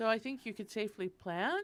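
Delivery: voice lifts upward on the last word plant. Quoting what she says about when to plant, voice rising at the end. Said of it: "she says with her voice going up like this".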